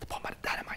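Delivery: soft, voiceless whisper.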